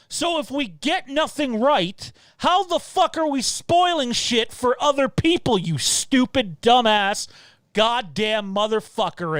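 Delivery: fed-up, angry, pissed-off rant. Ranting about a critic of the channel's spoilers: angry. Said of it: "I'm pissed".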